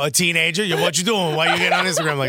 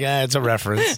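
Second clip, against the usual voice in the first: ordinary talk, nothing marked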